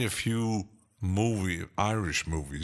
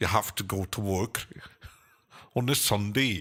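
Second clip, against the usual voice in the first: put-on Scottish-accented voice. Imitating what a Scot would say about working on a Sunday, Scottish accent. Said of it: "would uh, Scott say ... I like Scottish accent".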